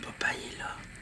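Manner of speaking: low, soft, voiceless whisper.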